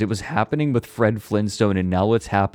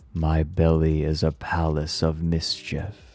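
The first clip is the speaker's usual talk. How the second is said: hushed whisper; 4 semitones lower, 4 dB quieter than usual. Narrating a story where the horse speaks to the royal guard; whispering. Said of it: "The horse whispers to the guard".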